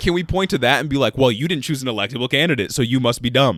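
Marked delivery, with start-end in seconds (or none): none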